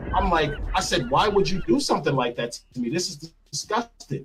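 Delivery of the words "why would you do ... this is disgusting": angry, pissed-off, disgusted outburst. Retelling an argument with a woman in a suite: imitating own angry past words. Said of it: "So I'm pissed".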